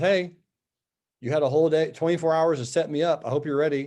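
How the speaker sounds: normal talking voice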